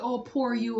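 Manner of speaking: ordinary talk, nothing marked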